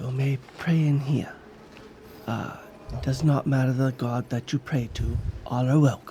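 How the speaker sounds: hushed, soft whisper. A game narrator voices a cleric speaking to visitors in a prayer room, whispering. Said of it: "he whispers".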